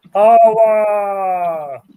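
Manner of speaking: loud, high, drawn-out, devout worshipful cry. Doing an impression of a man worshiping his god: Ray Romano worshiping his god. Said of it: "that man is Ray Romano".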